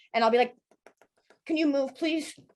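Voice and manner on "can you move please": put-on teeth-chattering voice, much higher. Retelling an argument at a hot dog stand, imitating a teeth-chattering voice. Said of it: "and my teeth will chatter too".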